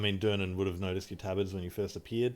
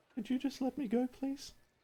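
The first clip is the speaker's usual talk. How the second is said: very high, faint, distant inner voice; 4 dB quieter than usual. Narrating to a player, the storyteller voices a faint voice in their head. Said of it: "you hear a faint voice in the back of your head say".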